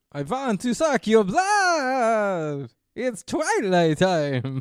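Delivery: booming voice with the word blood drawn out. Retelling Charlie's vampire act, in a Dracula voice. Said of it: "Dracula voice".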